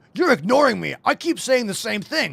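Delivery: impatient, rude, nagging grumble in a high voice. Imitating a viewer who complains about being ignored: imitating a rude complaint. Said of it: "if you say it in a bad way".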